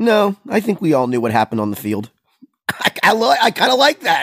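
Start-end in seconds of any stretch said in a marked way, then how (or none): 0.0-2.1 mimicked deadpan delivery. Host quoting a player's answer to a press question, retelling a deadpan answer. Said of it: "he did it deadpan with a little wry smile".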